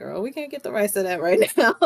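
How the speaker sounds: play-acted, amused voice laced with chuckles. Retelling a friend's answer to a question about show rights: imitating a chuckling reply. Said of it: "met with, like, a couple of chuckles".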